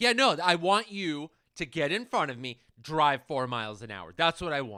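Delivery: very loud, swooping, furious sarcasm. Recalling past road rage while driving, retelling angry sarcasm. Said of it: "saying the opposite of how I feel in an angry tone".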